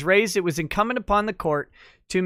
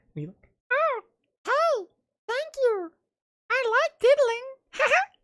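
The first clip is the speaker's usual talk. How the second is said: very high-pitched puppet voice. Reading a case's dirty parts aloud, voicing the second party: Elmo voice. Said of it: "Kermit and Elmo voice".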